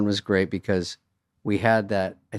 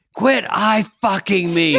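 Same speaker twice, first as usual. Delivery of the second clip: very high, shrill scream; 9 semitones higher than usual. Retelling a co-star's line from a movie scene: imitating someone screaming. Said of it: "She's, like, screaming to someone across the room".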